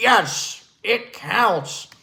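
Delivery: play-by-play sports announcer voice. Quoting a famous announcer's catchphrase: Marv Albert voice. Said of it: "As Marv Albert would say".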